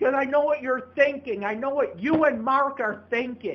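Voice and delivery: furious, shrill, very loud angry yelling. Answering someone who told them to take a breath, confrontational. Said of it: "take a breath. What are you getting in my face about?".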